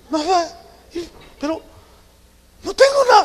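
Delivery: tearful, teary-voiced delivery.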